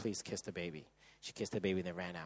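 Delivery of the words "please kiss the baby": hurried, urgent, much quieter and lower. Husband retells them presenting baby Nico to his wife: retelling a hurried request.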